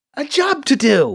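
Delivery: shrunken, diminished voice, small, high and slow. A man, cut off and challenged, finishes his sentence, sounding small. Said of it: "sounding small".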